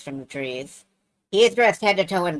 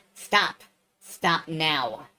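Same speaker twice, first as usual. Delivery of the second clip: close-up, hissing voice; 4 dB quieter than usual. Narrator voices a creature speaking into the listener's ear: hissing. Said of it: "hisses in your ear".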